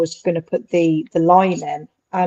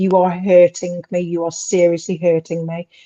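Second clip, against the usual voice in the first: normal talking voice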